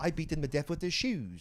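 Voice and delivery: phony, put-on British accent. Retelling a rock and roll magician's act: imitating a fake british accent. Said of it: "he was put on a fake British accent".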